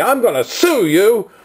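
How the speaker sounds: acted, furious, high, drawn-out angry scream. A man jumps out of a pickup truck at the speaker; retelling him screaming. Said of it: "starts screaming at me".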